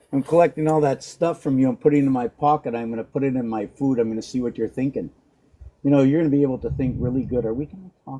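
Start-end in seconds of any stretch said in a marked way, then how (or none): 3.9-7.4 rushed, fast, rattled-off chatter. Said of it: "Am I talking too fast?".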